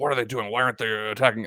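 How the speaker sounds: quiet mutter under the breath. Voicing a figure watching others climb a hill: muttering under his breath. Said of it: "mutters under his breath".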